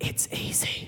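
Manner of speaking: soft, close, hushed whisper. Retelling how Dad spoke beside a sleeping pig: imitating Dad whispering. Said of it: "Dad just whispers in my ear".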